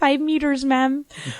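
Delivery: put-on heavy Spanish accent, laid on thick. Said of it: "she has a really thick accent. So she's like".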